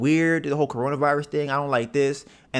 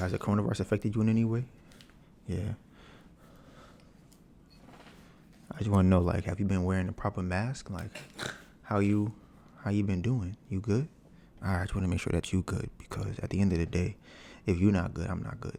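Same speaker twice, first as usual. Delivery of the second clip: low, soft, smooth put-on seductive voice; 5 semitones lower, 7 dB quieter than usual. Imitating the voice they put on, in a put-on sexy voice. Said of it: "They try to put in a sexy voice".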